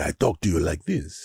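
Latin lover accent. Discussing accent stereotypes, demonstrating a latin lover accent. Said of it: "the Latin lover".

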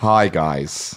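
acted lisping voice. Greeting the others on a call: Mike Pence impression. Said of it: "This is my Michael Pence".

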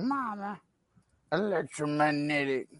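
quiet, soft, mumbly delivery. Asked for an impression, speaker recalls the film and does a Waterboy impression. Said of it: "[name]'s water boy impression".

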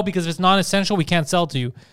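normal talking voice

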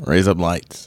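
put-on Australian accent. Saying a phrase on request: Australian accent. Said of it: "razor blades in Australian accent".

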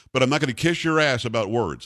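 usual speaking voice

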